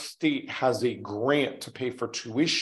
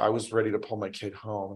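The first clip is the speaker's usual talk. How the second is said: choked-up voice, lower and quieter; 4 semitones lower, 5 dB quieter than usual. Retelling what a parent said in the office: imitating someone choked up. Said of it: "he's choked up because he's like".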